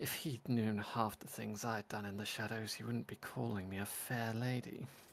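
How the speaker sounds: soft, hushed, secretive half-whispered aside. Voicing a character who leans in to another character: half-whispering. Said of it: "whispers to him".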